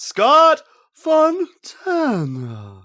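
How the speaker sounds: breathy announcer call, very high and swooping. Trying out a breathy ring announcer's name call: breathy Michael C. Williams announcing. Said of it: "I'm gonna try it".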